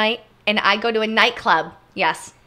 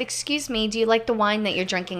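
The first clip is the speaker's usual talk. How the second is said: usual speaking voice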